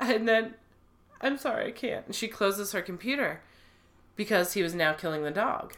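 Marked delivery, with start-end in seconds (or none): 0.0-2.1 mock choked-up voice, catching with emotion. Retelling how a woman watching videos spoke: imitating someone choking up. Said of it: "then she gets all choked up".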